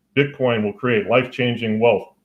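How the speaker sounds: normal talking voice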